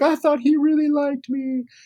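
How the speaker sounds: tearful, very high-pitched, sobbing voice. Retelling a movie scene where Kathy is distraught: imitating Kathy crying. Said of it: "She's, like, crying".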